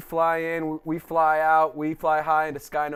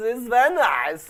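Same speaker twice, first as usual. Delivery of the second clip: put-on Kazakh accent, higher; 7 semitones higher, 3 dB louder than usual. Signing off the show together in a Borat voice. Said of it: "We're doing the Borat voices".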